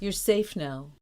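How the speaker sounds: ordinary delivery, nothing marked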